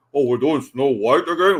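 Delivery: fake deep dramatic voice. Telling others what Peter Dinklage said, you do him in a deep Peter Dinklage voice. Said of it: "with that deep voice of him".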